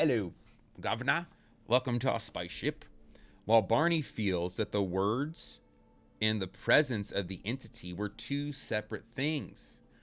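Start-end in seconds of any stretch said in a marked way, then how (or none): 0.0-2.8 put-on English-accented alien voice. Retelling an abduction account, the speaker voices the alien entity: english accent. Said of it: "like an English accent".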